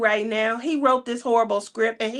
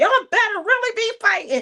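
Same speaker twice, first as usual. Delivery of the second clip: furious, very high-pitched scolding tone; 11 semitones higher than usual. Retelling what an annoyed Crashly said downstairs, imitating Crashly angry. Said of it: "We could see the smoke coming out her ears".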